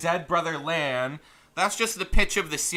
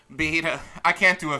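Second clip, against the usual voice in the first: ordinary talk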